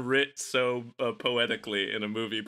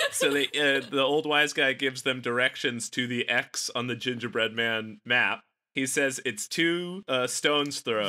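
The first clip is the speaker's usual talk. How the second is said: usual speaking voice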